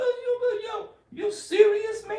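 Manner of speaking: very high, shrill, loud angry outburst. Reading a comment about someone's angry voice: Mike Tyson voice. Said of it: "Mike Tyson voice come out when he get angry".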